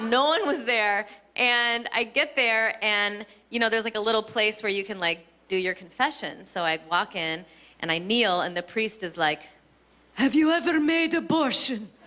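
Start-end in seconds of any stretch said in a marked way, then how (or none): 10.1-11.8 put-on old horror-film vampire voice. Retelling what a priest asked in confession: Dracula voice. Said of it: "making him sound like Dracula".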